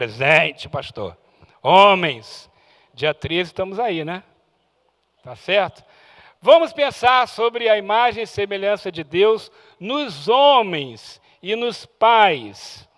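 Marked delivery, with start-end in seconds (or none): 0.0-1.2 very low, thick, deep manly voice. A preacher asks if the men are present and answers for them: deep manly voice. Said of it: "Aquela voz grossa de homem".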